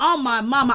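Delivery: plain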